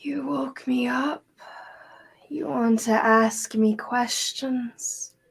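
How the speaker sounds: groaning, groggy just-woken voice. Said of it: "almost like a groan of someone waking up".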